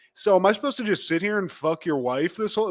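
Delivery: mock smug, cocky. Describing a movie scene, acting out Viggo Mortensen's character: mock-cocky Viggo Mortensen line. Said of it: "starts getting fucking cocky and is like".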